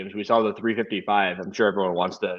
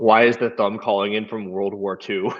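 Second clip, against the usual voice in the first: ordinary delivery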